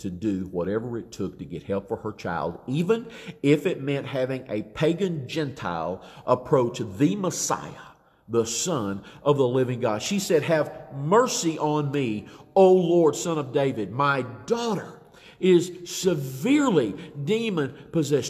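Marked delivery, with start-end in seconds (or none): none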